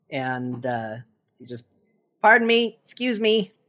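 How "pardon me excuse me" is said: small, higher-pitched little gnome voice. Voicing a gnome pushing through a crowd with a bowl: gnome voice. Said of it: "a gnome".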